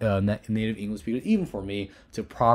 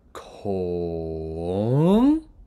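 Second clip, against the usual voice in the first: Kong dipping low, then rising high; 3 semitones lower, 5 dB louder than usual. Tone lesson comparing to Mandarin third tone, rising tone on Kong. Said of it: "Next one is rising tone. ... It's basically going low to high".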